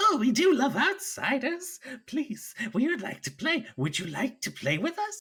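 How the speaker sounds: tiny creature voice, very high, swooping, sing-song. Voicing a gnarly little being on a vine inviting outsiders to play: little gnarly creature voice. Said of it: "they say".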